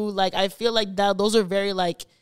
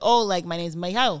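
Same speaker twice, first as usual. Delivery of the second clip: put-on thick Spanish accent, male voice; 3 semitones lower than usual. Retelling a talk with a drunk pool stranger: imitating a thick Spanish accent. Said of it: "His accent was really, really thick".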